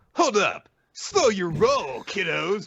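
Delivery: unhurried, cool, slow, high-set cool-guy voice. Retelling what President Mike says: cool President Mike voice. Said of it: "President Mike says, ... because he's very cool".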